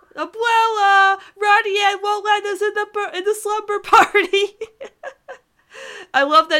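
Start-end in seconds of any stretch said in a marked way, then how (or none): 0.2-4.6 put-on high, loud tattling child yell. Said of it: "he pulled the child card".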